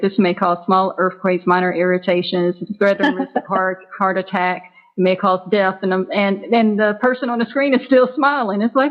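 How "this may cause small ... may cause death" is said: ordinary delivery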